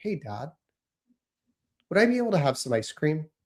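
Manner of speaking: calm, soft, gentle, courteous voice. Showing how they ask their dad for something, in a calm, soft, polite voice. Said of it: "speaking in a calm, soft, polite voice like this".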